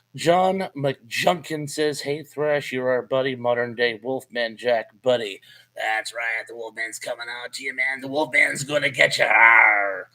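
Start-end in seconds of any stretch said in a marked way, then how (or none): 5.8-10.0 hammed-up delivery with long drawn-out "arr". Answering a message that calls you a modern-day Wolfman Jack, do a pitiful Wolfman Jack impersonation. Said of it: "That's a pitiful Wolfman Jack impersonation".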